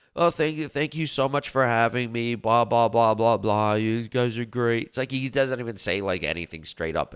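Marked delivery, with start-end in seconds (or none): 0.2-4.9 slow, drawn-out delivery, every word stretched. Mocking Mike Pence's debate statements: slow Mike Pence impression. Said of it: "he talks so damn slow, Mike Pence does".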